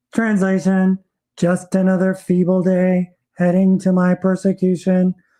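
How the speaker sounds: flat, mechanical robotic monotone. In a sketch, a voice translates the truth behind small talk, robotic voice. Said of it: "overlaid by a robotic voice translating the truth".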